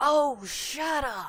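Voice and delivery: loud, high-pitched hollering. Retelling how a great aunt yelled at truckloads of Marines: imitating someone yelling. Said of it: "she yells at these truckloads of Marines".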